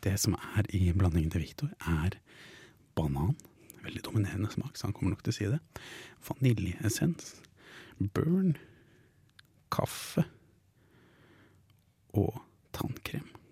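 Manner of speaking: soft whispering. Whispering to the listeners so the partner who must guess can't hear, whispering to the listeners. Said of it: "Jeg hvisker til lytterne".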